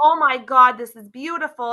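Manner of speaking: mock, loud, thrilled, delighted screaming. Retelling a girl running up to the truck, imitating an excited scream.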